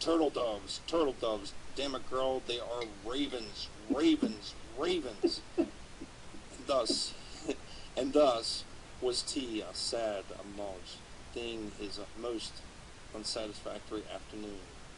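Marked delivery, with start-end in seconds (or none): 0.0-5.4 furious, enraged, sputtering, fuming voice. Reading a scene aloud, a figure sputtering and fuming in an enraged voice. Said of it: "read it as if you were an enraged poet".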